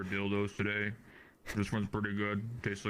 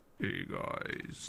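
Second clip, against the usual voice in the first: raspy, creaky, scraped-out voice; 14 semitones lower, 4 dB quieter than usual. Told that someone needs to sound more like him, answer with a Corpse Husband impression. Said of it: "he needs to sound more like corpse husband".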